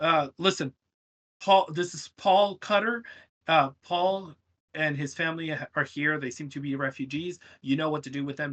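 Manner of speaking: ordinary talk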